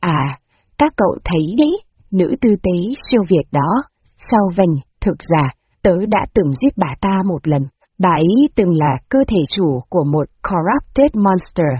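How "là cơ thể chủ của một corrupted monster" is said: ordinary delivery, nothing marked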